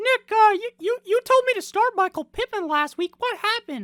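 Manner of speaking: very high, squeaky cartoon voice. Questioning someone about last week's advice, in a Mickey Mouse-like voice. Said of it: "I do kind of sound like Mickey Mouse in that voice".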